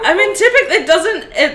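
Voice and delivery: laughing.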